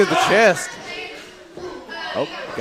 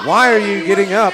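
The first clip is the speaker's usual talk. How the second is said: plain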